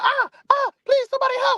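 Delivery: play-acted, very high, piercing scream. Retelling a boy being jumped outside his house: imitating someone screaming. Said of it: "he was just screaming".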